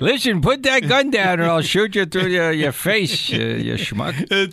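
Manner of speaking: high-pitched cowboy character voice.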